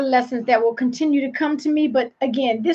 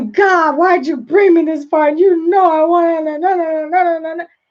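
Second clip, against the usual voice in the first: play-acted petulant, sulking, pouting voice; 3 semitones higher, 4 dB louder than usual. Retelling a complaint to God after a negotiation: pouting, imitating herself complaining. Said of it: "poke my lips out and say".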